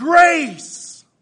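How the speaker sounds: shouted high and loud. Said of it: "and they'll shout".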